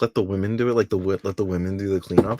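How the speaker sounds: normal talking voice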